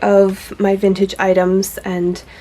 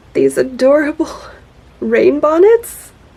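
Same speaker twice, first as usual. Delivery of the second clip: high, squealy, gushing, delighted squeal; 6 semitones higher than usual. Describing rain bonnets found at the same booth, squealing.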